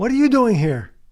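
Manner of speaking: loud, high-pitched yelling.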